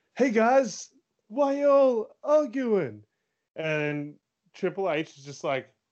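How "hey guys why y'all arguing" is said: very high, hollered, drawn-out yell. Retelling a Survivor Series promo where he yells to his arguing team; retelling a yell. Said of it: "he just yells out".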